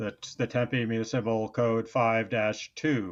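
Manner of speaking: playful, spooky, menacing put-on scary voice. Announcing to the others a switch to a mock scary voice. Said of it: "I'll use my scary voice".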